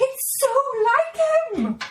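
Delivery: high, slow, tearful shocked voice. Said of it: "And he was like".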